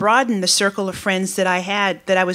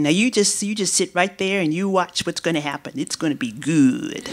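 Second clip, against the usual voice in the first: put-on loosely done, rough Mississippi accent. Retelling a coworker's words about a practical joke: imitating a Mississippi accent. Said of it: "I can't do a Mississippi accent to do it justice".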